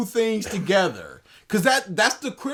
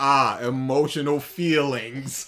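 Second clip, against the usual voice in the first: put-on alien voice, lower-pitched and slower; 8 semitones lower than usual. Asking whether something sounds robotic, imitating an alien reading. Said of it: "an alien in a billion years picks up a book and goes".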